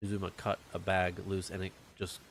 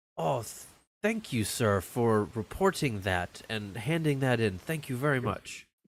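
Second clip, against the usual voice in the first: mocking, sarcastic politeness; 4 semitones higher, 4 dB louder than usual. Narrating the new guy's reply in a role-play scene, in a sarcastic tone. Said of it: "talks in this kind of like sarcastic tone".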